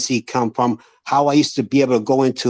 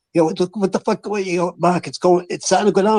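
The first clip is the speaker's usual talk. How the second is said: put-on yelling, higher pitch; 6 semitones higher than usual. Retelling calling his son as the stock dropped, retelling own past yell. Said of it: "I'm yelling at him".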